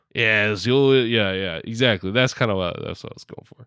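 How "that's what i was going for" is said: unvoiced whispered aside.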